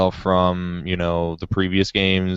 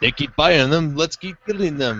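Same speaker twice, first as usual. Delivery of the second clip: terrible put-on Japanese accent, pitched up; 8 semitones higher than usual. Speaker mimicking them talking about buyers: terrible Japanese accent impression. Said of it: "so I'm gonna do my best Japanese impression".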